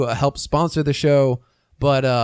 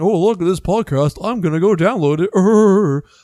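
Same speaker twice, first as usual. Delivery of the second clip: snide, mocking, sarcastic tone with drawn-out it; 4 semitones higher, 4 dB louder than usual. Imitating a listener on itunes about to download the podcast: imitating a sarcastic listener. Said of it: "sarcastic ass about that".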